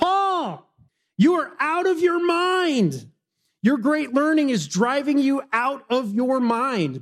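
loud high-pitched outburst. Reading a bible passage, voicing a listener's reply to a man's defense, in a loud voice. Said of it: "Festus said with a loud voice".

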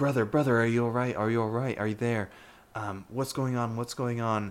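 very concerned, worried, anxious voice. A half-elf calling out to their twin brother, in a very concerned voice. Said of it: "the half-elf's voice is very concerned".

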